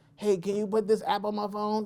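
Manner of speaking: put-on old person voice. Joking about becoming the old person: imitating an old person. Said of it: "kinda be the old person like".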